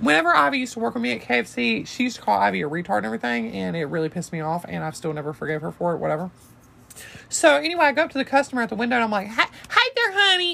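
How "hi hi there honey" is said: very high-pitched, drawn-out mocking voice. Retelling greeting a customer at the window: mocking her voice. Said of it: "and I mocked her voice".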